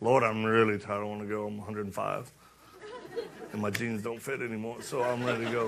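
put-on very old man voice, low and worn-out.

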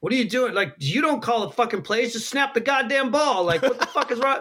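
acted-out, high, angry yell. Retelling a sideline clip of Peyton Manning and his center: imitating Peyton Manning yelling. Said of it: "Peyton Manning yelling at Jeff Saturday".

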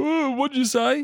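very high, drawn-out, panicking freaked-out voice. Retelling an air traffic controller's reply: imitating someone freaking out. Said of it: "the guy in the air traffic controller started freaking out".

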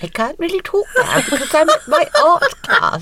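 little put-on posh voice, high and sing-song. Retelling phoning Judith halfway through her class, imitating Judith's posh voice. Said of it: "Did a little posh voice where you went".

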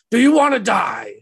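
high, shrieking, play-acted stage scream. Voicing a lead performer in a bards' play: screaming. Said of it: "lead performer just screaming".

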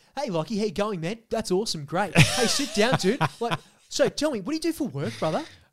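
overfriendly, chummy bro-style patter. Acting out a gym worker's chat with a new member: imitating a gym worker. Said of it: "Here's how the conversation goes".

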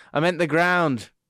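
ordinary delivery

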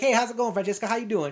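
sleazy-friendly, pervy and offhand tone. Retelling a movie scene, a kid mimicking Joe Clark: Joe Clark impression. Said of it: "he kinda nails the impression".

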